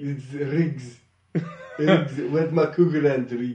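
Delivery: loud put-on South African accent. Quoting Lethal Weapon 2 while discussing South African politics, in a South African accent impression. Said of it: "that's my South African impression".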